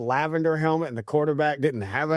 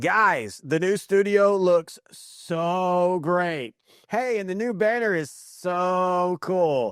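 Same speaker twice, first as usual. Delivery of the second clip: very slow, mocking sarcasm, so drawn out; 4 semitones higher than usual. A coach reacts to the new studio and banner, sarcastic. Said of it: "I'm being sarcastic".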